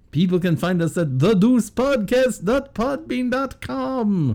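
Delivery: put-on Transylvanian-accented voice. A co-host, asked where people can find the show, answers in a put-on Transylvanian accent. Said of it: "Why do you sound Russian?".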